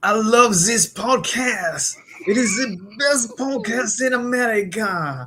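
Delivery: stock French accent. Ranking accents, number three on the list, french accent. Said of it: "the old Frenchie, the frog accent".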